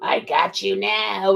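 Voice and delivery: put-on menacing, creaky, very slow old-man voice. Retelling what a demon who turned out an old man said, scary old man voice. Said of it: "in this scary voice".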